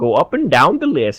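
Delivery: put-on Canadian accent. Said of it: "Just awful Canadian".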